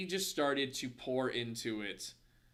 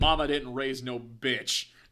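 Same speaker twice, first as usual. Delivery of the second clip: put-on booming battle cry, louder; 7 dB louder than usual. Retelling the same line as a battle cry: imitating a battle cry. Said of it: "it was this battle cry".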